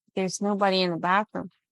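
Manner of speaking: usual speaking voice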